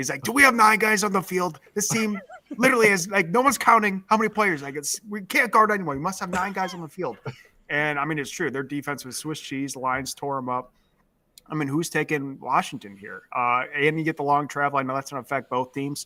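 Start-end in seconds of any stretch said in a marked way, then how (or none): 0.2-7.2 put-on screaming fan, loud, pitched-up, ranting. Retelling a fan who calls in after every game: imitating a caller screaming. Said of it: "he's just screaming into the phone".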